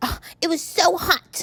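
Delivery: very slow, high, drawn-out put-on baby voice. Quoting his reply after she asked about the napkin, in a baby voice. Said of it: "he put that baby voice on again".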